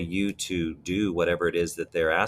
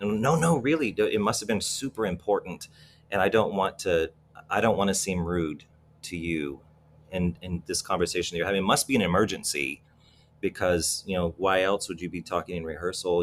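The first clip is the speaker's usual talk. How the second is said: ordinary talk, nothing marked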